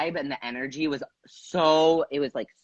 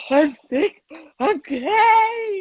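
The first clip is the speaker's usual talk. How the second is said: acted tearful sobbing, very high and very slow; 4 dB louder than usual. Retelling a talk over coffee with her, the speaker is retelling hysterical crying. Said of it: "hysterically crying".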